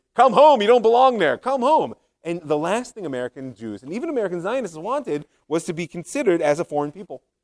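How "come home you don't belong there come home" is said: blaring, very loud, high, trumpet-like call. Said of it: "this sort of trumpeting voice".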